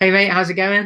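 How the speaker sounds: put-on Australian accent, casual and friendly. Greeting someone who has just come on, in an Australian accent. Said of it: "I'd start my Australian accent then".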